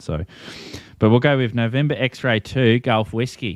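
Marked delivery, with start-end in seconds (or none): 1.5-3.6 slow, best-effort put-on Australian accent. Giving a call sign on the radio in a put-on Australian accent. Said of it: "That's probably my best Australian accent".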